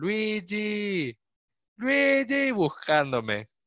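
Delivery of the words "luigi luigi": put-on very high, drawn-out shouted call. Retelling how a friend called out while searching: imitating a friend shouting. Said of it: "mi amigo empieza a gritar".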